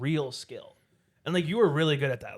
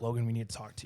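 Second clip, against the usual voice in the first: imitated deadpan, lower, quieter, faster; 3 semitones higher than usual. Reminding two people how they approached the speaker at a party: retelling a deadpan delivery. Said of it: "you both were like deadpan, like serious".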